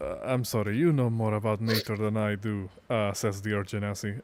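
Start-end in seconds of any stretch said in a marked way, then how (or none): 0.2-2.7 whispering in a put-on voice. Playing a character who whispers an apology to another character: whispering in character. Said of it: "whispers to him".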